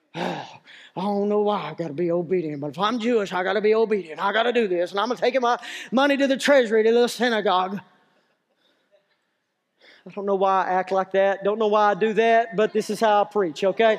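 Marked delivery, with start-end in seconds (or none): 0.1-7.8 acted-out, reluctant, put-upon grumbling complaint. A preacher acts out a man grumbling while bringing his offering, imitating a grumbling man. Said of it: "may have been grumbling the whole stinking time".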